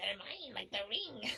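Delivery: put-on creepy, possessive character voice. Retelling what a woman said about the donkeys: Smeagol voice. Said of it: "the Smeagol is like".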